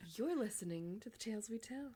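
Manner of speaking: silky, smooth late-night radio DJ voice. Recalling how the speaker did the podcast intro, smooth podcast-intro voice. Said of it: "my own like [name] podcast voice".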